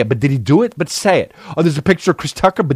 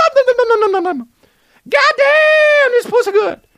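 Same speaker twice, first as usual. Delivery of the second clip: bad put-on voice, pitched very high. Doing a Chris Tucker voice that a friend calls the worst impression. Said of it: "Why is my Chris Tucker impression Towley".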